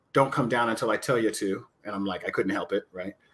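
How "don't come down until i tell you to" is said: imitated whisper. Retelling what was said to him during a match: imitating a whisper. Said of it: "he whispers to me".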